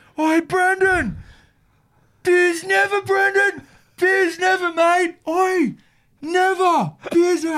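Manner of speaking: put-on very high, shrill, drawn-out screaming. Retelling how a fan at the sideline yelled at a player: imitating a fan screaming. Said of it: "he's screaming".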